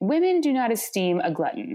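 ordinary delivery

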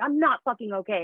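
play-acted, blurted yell at the breaking point. Recounting a conversation with him, the speaker re-enacts their own yell. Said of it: "I yell".

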